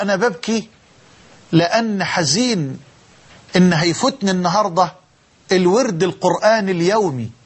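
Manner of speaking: normal talking voice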